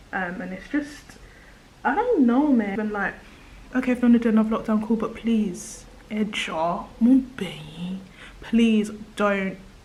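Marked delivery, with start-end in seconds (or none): 6.1-9.5 drawn-out, mock pleading beg. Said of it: "I'm begging you".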